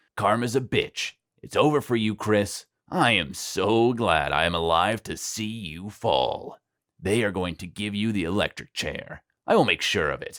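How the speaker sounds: spiteful, hateful sneer, spat out. Narrator voicing the sheriff taunting Chris: sneering. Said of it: "He was a burly man who used to be a boxer. / He was a burly man who used to be a boxer. / the sheriff spat with hate. / the sheriff sneered. / The sheriff had always hated [name]".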